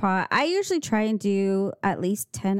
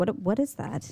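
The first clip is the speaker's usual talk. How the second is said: normal talking voice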